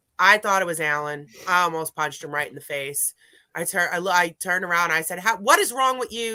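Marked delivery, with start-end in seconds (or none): 5.2-6.4 put-on, pitched-up yell. Retelling yelling at someone who seemed to shout in one's ear: retelling own yell. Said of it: "Yelled at him".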